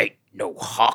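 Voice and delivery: put-on Western tough-guy voice, oddly enunciated. Recalling old 70s Westerns, speaker does a Jack Palance impression. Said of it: "How he like has that weird enunciation of things".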